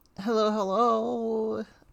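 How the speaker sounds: drawn-out voice, breaking and cracking slightly. Opening greeting, voice cracking a little. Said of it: "My voice cracked a little bit there".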